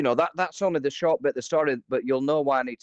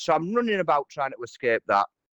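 ordinary delivery

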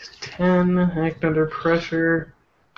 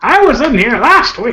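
put-on loud, high, grumpy, cranky old man rant; 8 semitones higher, 7 dB louder than usual. Playing an old character barging into a room: old man rant. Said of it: "do an old man rant".

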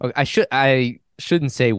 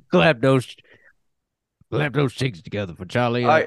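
put-on New Orleans accent. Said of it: "they give him, like, a New Orleans accent?".

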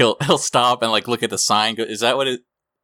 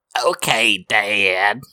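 put-on cartoon boy voice. Explaining how to squint your voice, speaker demonstrates a squinted Bobby Hill voice. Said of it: "what if you squint your voice".

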